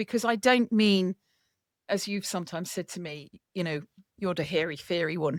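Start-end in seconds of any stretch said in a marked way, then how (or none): 4.2-5.4 mock Irish accent, lower. Quoting what the listener sometimes says to the speaker, put-on Irish accent. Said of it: "Is that your Irish accent?".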